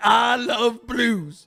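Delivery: mocking send-up of a rich blues fan. Imitating a billionaire on a brewery stage, mocking a billionaire blues fan. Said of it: "and he's like".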